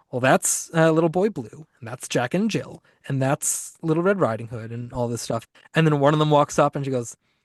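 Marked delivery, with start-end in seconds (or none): none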